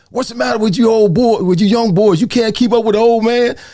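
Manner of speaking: high-pitched, teasing yell. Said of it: "and I yell across the gym".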